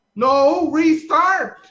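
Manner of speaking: very loud, urgent, full-throated yelling. Answering whether anything else is needed before restarting: yelling. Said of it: "keep yelling like that".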